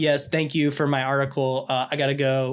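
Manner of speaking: exaggerated put-on inconvenienced tone. Describing a film scene, acting out a man on a phone call: acting super inconvenienced. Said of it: "he acts super inconvenienced".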